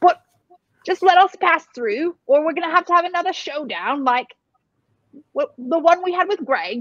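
put-on British accent, character voice. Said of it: "your Scottish roots are coming out".

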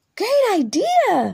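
high exclaiming cry, words drawn out long. Narrator reads Bunny's reply to Mom, crying out. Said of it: "cried Bunny".

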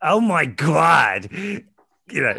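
very loud, exaggerated, over-the-top New York accent. Describing accents in English school plays, doing an over-the-top New York accent. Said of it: "all the accents are really New York".

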